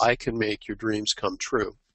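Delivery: ordinary delivery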